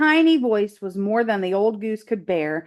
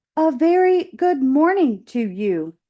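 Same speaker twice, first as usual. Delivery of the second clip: friendly, kindly robot voice, pitched up; 5 semitones higher than usual. A robot greets a goose floating on a pond: friendly booming robot voice. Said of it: "the robot's friendly voice boomed over the water".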